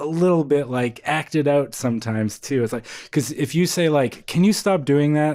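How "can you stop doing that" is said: clearly annoyed, openly irritated tone. Advising someone to act feelings out, an example in a clearly annoyed voice. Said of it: "clearly annoyed in your voice".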